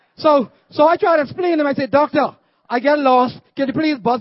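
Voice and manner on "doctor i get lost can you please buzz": ordinary talk, nothing marked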